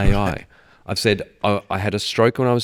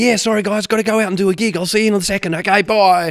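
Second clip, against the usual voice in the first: upbeat voice, higher in pitch and louder; 12 semitones higher, 5 dB louder than usual. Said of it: "the crocodile hunter becomes [name]".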